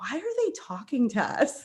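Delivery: hushed whisper under the breath. Recounting a family trip to a baseball stadium, the speaker retells his whispered question. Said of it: "he just whispers".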